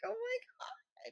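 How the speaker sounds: very quiet, hushed, high little squeak. Speaker shows how their voice squeaks when greeting people: imitating own high squeak. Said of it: "And I squeak".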